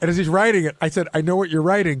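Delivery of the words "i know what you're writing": usual speaking voice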